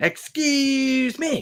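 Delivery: put-on, very high, entitled, complaining voice. Joking about messaging someone with inner Karen: imitating a complaining Karen. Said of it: "my inner Karen".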